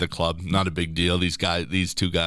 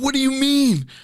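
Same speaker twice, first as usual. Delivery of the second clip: put-on high, loud, drawn-out angry outburst; 5 dB louder than usual. Retelling a teammate's reaction to his declined card: imitating an angry outburst. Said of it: "He erupts".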